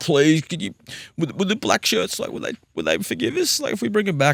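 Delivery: mock crying, very high-pitched, swooping, tearful. Retelling a late-night call from a venue owner: imitating someone crying on the phone. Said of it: "just crying down the phone".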